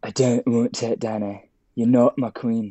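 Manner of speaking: put-on accent close to Scottish. Asked what else he says, quoting him in a put-on near-scottish accent. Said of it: "Isn't that Scottish?".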